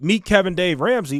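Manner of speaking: ordinary delivery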